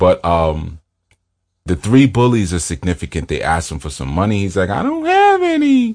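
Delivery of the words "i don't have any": very high-pitched, slow, deliberately annoying voice. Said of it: "he's got this real annoying voice".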